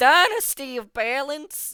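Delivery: shrill, booming, very high loud intoning from afar. Voicing Duke speaking into the players' ears: Duke intoning. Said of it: "and Duke, like, intone into your ear".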